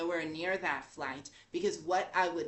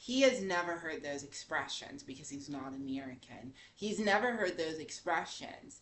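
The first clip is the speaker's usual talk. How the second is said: plain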